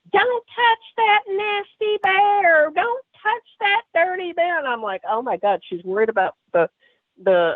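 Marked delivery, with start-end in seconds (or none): 0.1-4.6 screaming, pitched very high. Telling of pushing a bear out the car window while mother screamed: imitating mother's screaming. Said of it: "my mother can do is scream".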